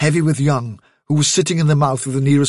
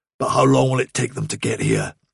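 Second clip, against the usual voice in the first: usual speaking voice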